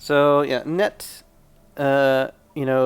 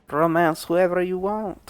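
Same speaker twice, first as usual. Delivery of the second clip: terrible fake French accent, higher pitch; 5 semitones higher than usual. Commenting on romance in a French-made game, in a terrible French accent. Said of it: "A terrible French accent".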